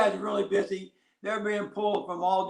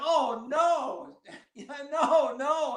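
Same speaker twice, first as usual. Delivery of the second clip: mock yelling, much slower; 7 semitones higher than usual. Retelling watching his player catch the ball and run sideways, retelling a yell. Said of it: "So I'm yelling".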